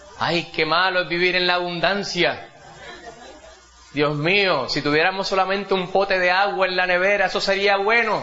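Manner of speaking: jokey, playful, teasing, woeful lamenting tone. Retelling what the speaker said to tease someone: retelling a teasing remark. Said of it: "La vacilo y digo".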